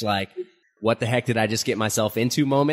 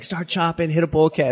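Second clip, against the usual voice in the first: mock, high-pitched, screamed-out delivery; 5 semitones higher than usual. Recalling walking through a hall while people shouted unknown terms, retelling their screaming. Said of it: "people were like screaming at me".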